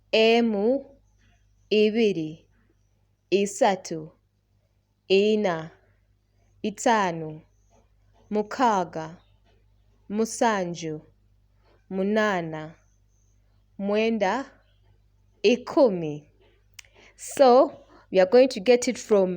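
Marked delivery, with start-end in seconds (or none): 0.1-16.2 very slow, deliberate, spaced-out counting. Counting the numbers one to ten aloud for learners to follow: counting slowly. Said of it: "Slowly from the first one".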